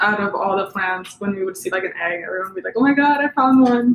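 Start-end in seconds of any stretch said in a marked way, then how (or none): 2.8-4.0 high, loud, mock thrilled excited cry. Speaker recalls everyone spotting an egg among the plants, imitating excited exclamation. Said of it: "seeing like everyone like excited".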